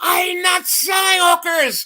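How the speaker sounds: shrill, very high shout, dragged out. Retelling an argument with a man they thought was scamming them, imitating a man yelling. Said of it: "And finally he just yelled".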